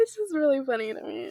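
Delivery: crying with laughter. Reacting to a funny mix-up about ages, laughing to tears. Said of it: "I'm crying a little bit".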